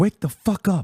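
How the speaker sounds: high, whisper-screamed outburst. Ranting to chat without waking the neighbor, whisper-screaming. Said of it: "I have to whisper scream".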